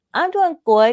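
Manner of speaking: put-on high, loud voice of a three-year-old boy. Retelling what a three-year-old boy said on meeting: imitating Donald's way of talking. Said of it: "he talked like that".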